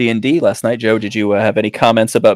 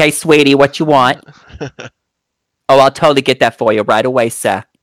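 put-on New York accent, diner waitress voice; 3 semitones higher, 3 dB louder than usual. Describing a character they brought up, doing a new york diner girl voice. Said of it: "just a New York diner girl".

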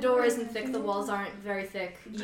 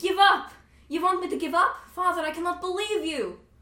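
very high, very loud, shrill, booming cry; 9 semitones higher, 6 dB louder than usual. Alora answers her father telling her to give it up, Alora, very loud. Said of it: "And Alora says very loudly".

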